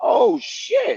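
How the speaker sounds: very high, shocked yelp. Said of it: "I was like".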